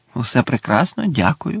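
ordinary talk

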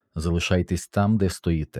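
ordinary delivery

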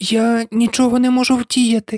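softly and gently. Alice answers the dormouse beside her, who complains she is pressing him: very gently. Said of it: "дуже лагідно пояснила Аліса".

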